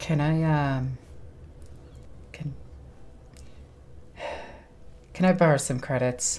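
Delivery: deliberately low, halting whisper. Asking a companion in character to borrow credits, speaking low on purpose. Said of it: "I'm trying to speak low on purpose".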